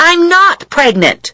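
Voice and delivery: very high, shrill shouted outburst. [name] cuts in while Pat talks to Dave about her; shouting. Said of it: "[name] shouted".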